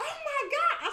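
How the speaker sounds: very high squeal of excitement. Retelling seeing a super moon on the phone: imitating own screaming. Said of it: "I started screaming".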